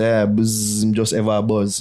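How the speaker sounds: ordinary delivery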